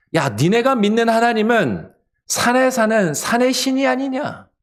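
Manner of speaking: high-pitched mocking, jeering tone.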